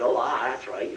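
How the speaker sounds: accent of Plymouth. Explaining where the American accent came from, West Country accent. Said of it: "all talk like that there".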